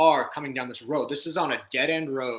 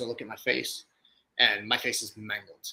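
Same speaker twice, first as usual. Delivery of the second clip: ordinary talk, nothing marked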